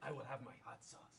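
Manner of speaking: exaggerated put-on Spanish accent. Playing a scene with other characters, in a fake Spanish accent. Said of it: "so I'm just gonna have this accent".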